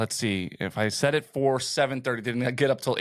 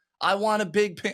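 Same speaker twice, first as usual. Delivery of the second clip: put-on yelling voice, pitched higher; 8 semitones higher than usual. Retelling a comedian's stand-up joke: imitating Pete Holmes yelling. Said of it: "he's just yelling it a bunch of times".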